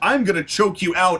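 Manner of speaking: plain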